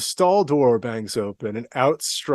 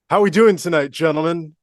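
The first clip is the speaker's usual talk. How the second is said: booming, very loud, pitched-up call; 5 semitones higher, 6 dB louder than usual. Retelling what a man in a washroom said to everyone: imitating someone speaking very loudly. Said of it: "he says very loudly".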